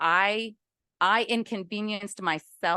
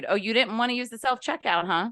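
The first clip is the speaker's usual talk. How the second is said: acted, offended, put-out tone with attitude; 2 semitones higher than usual. Retelling what the store woman said to the son: imitating a woman with an attitude. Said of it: "with an attitude".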